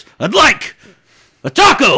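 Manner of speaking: loud, high-pitched impression shout. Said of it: "I really hope Goldberg sounds the way he does".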